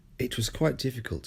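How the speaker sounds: ordinary delivery, nothing marked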